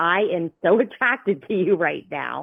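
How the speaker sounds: normal talking voice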